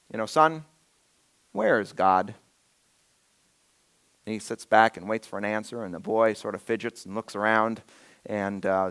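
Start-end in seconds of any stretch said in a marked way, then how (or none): 0.2-2.3 acted gentle, calm pastor voice, slow and nice. Telling a story where a pastor turns to a little boy, mock nice, calm voice. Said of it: "in a nice, calm voice says".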